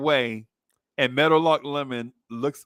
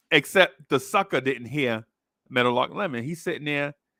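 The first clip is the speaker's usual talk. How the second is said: ordinary talk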